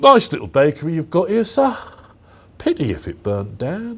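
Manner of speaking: put-on sing-song London accent. Acting out a protection-racket threat at a bakery: london accent. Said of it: "That was a London accent".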